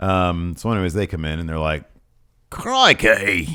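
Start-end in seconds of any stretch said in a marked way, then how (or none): 2.5-3.6 loud, bad put-on Australian accent. Retelling what a wrestling team said on arrival: horrible australian accent. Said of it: "not continue with an Australian accent".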